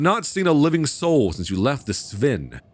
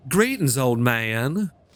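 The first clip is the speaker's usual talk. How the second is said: little Southern belle character voice. Player voicing her game character greeting an old man, little Southern belle voice. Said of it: "like a little little Southern belle on a mission".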